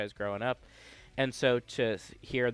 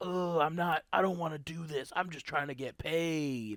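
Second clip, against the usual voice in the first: edgy try-hard voice, pitched up, end drawn out; 5 semitones higher than usual. Mocking a game character's dialogue: imitating edgy EXE. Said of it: "really edgy".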